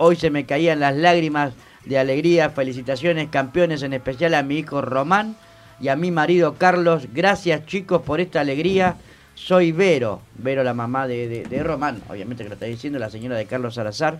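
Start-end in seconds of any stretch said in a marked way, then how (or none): none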